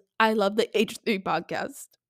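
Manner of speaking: ordinary talk, nothing marked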